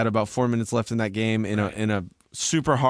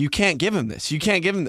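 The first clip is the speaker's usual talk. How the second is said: mock yelling, faster; 7 semitones higher than usual. Speaker recounts watching the Eagles game with others, retelling screaming at the TV. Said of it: "We're screaming at the TV".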